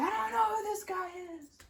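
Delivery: mock high-pitched screaming outburst. Retelling an anime scene where a cornered character denies knowing someone: imitating someone screaming. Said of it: "screaming out in support for".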